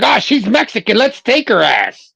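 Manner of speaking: swooping, animated, chattering voice. Acting out agents grabbing a mother with an accent: imitating immigration agents. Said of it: "They'd be like".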